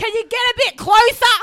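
very high, very loud yelling. Retelling a man yelling out his car window at a roundabout: retelling a yell. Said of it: "he yells out of his car".

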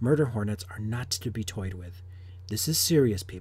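very quiet, low, hushed, dead-serious voice. Presenting a news article to viewers, putting on a serious voice. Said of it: "this is my serious voice".

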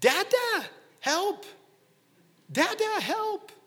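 put-on very high, very slow, drawn-out tiny toddler yell. A dad retells hearing his toddler call from the entryway, imitating a tiny toddler voice yelling. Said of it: "this tiny little voice yelling".

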